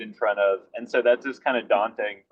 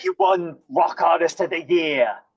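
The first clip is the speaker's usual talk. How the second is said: put-on British accent, higher; 7 semitones higher than usual. Retelling what a man said before the show: imitating a British accent. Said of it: "a British accent too".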